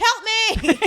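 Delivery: very high-pitched, loud shout. Speaker retells a woman yelling out the window: retelling a yell for help. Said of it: "she literally like just yells out the window".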